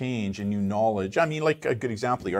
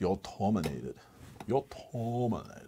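failed cyborg voice, breathed in a whisper; 8 dB quieter than usual. Joking that a cyborg appears behind them: failed Arnold Schwarzenegger impression. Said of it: "That's my failed, uh, Arnold Schwarzenegger".

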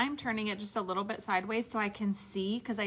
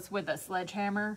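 ordinary delivery

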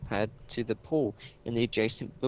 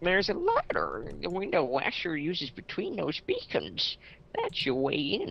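animated, pitched-up, swooping video game character voice; 6 semitones higher than usual. Playing a game and doing a character's instructions, game character's voice. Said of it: "I'll go do his voice".

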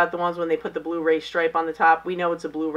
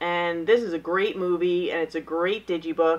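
normal talking voice

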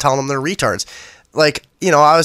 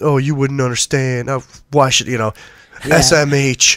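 mock arrogant, haughty tone. Retelling an online argument, imitating an arrogant commenter. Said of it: "little arrogant fucking".

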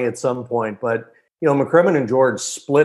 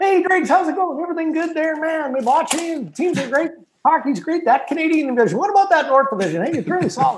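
very high, rapid-fire, relentlessly cheery upbeat chatter. Imitate a man greeting Dregs and talking hockey, imitating a very fast, positive talker. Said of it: "he talks so fast, right? Oh. And he's so positive".

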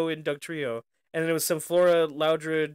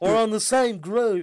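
put-on high, goofy, drawn-out Southern accent; 5 semitones higher, 3 dB louder than usual. Repeating another speaker's line in a Southern drawl. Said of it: "Southern draw".

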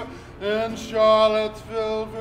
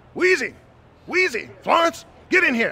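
put-on yell like a little rooster; 5 semitones higher, 3 dB louder than usual. Imitating someone yelling for Wheezy and Florence: yelling like a little rooster. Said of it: "Like a little rooster".

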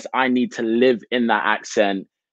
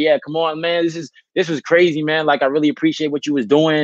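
put-on American New York accent; 5 semitones higher than usual. Retelling going up to everyone at the end, in a new york accent. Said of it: "my New York accent".

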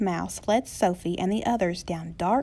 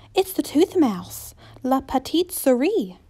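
gasped, higher and louder; 4 semitones higher, 5 dB louder than usual. Sophie, on her tiptoes, sees an old mouse appear from the shadows, gasped. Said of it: "Sophie gasped".

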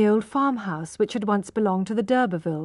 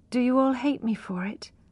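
low voice, quieter; 3 semitones higher, 4 dB quieter than usual. Tess speaks to Marion, Iz and Retty, in a low voice. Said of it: "asked Tess in a low voice".

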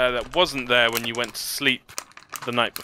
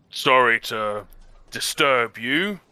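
put-on rough, gruff, old orc monster voice. Narrator voicing the elderly orc second-in-command at the door, in a gruff tone. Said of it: "he stares in a gruff tone".

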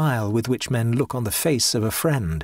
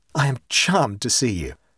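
usual speaking voice

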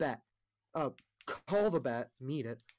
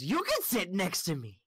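coy, flirtatious, flirty hag voice; 4 semitones higher than usual. Voicing a hag inviting one player to sit beside her: flirty green hag voice. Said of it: "and she goes".

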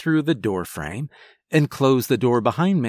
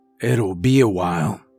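put-on rough, deep, raspy old man voice; 5 semitones lower than usual. An old man takes key pieces from the narrator, deep raspy old man voice. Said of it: "His voice was deep and raspy".

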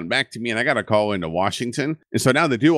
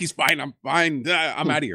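put-on frazzled, nervous, flustered voice, pitched up; 5 semitones higher than usual. Retelling the woman answering the lieutenant: imitating a stressed character. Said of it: "She's clearly under a lot of stress".

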